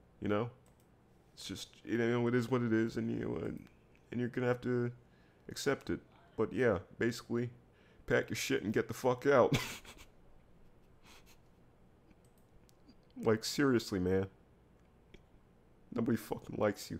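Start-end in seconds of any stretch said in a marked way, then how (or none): 8.1-17.0 talking through own laughter. A streamer delivering his own joke on stream, laughing at his own joke. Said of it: "I'm laughing at my own joke".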